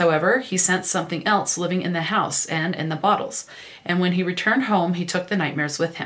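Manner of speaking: ordinary delivery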